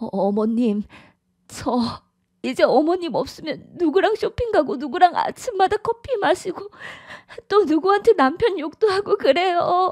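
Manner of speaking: very high, weepy, tearful words through sobs. In a drama, a daughter-in-law speaks to her mother-in-law, crying while talking. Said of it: "왜 울고 그래?".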